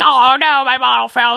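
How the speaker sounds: high-pitched put-on sobbing like a little baby. Retelling dropping a bottle as a baby: imitating own past crying. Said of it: "I'm crying my eyes out".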